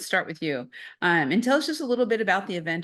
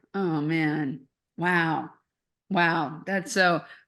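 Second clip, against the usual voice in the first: very slow, drawn-out, choked-up voice. Reacting to a story about selfless veterans: choked up. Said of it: "I'm getting a little choked up here".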